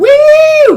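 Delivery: very high, loud mock celebratory whoop.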